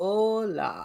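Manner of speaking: put-on German accent, Spanish "Hola" drawn out. Retelling first learning Spanish, imitating own German-accented Spanish. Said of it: "I'm very German".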